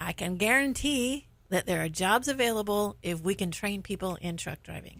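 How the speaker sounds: ordinary delivery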